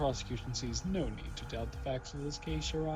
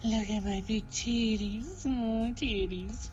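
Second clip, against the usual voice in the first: high, sexy, seductive screen-siren voice; 8 semitones higher, 4 dB louder than usual. Voicing the character April May, the speaker uses a sexy Marilyn Monroe voice. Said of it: "I like giving her the sexy Marilyn Monroe".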